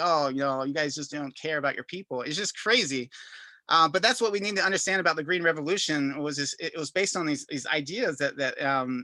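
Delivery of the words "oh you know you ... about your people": ordinary delivery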